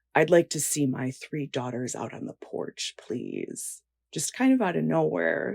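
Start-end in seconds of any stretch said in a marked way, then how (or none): 0.1-3.8 grave, dead-serious, very serious tone. Retelling a father asking his three daughters onto the porch: imitating a very serious tone. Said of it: "he says very seriously".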